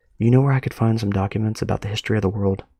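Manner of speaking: soft, hushed, quiet, under-the-breath tone. Narrator voices Cole asking a receptionist a question, in a hushed voice. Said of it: "speaks in a hushed voice".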